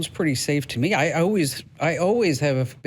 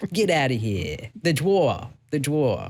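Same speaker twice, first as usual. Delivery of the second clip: put-on, mock New York accent. Telling a listener the tool will understand their accent, imitating a new york accent. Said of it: "your New York accent".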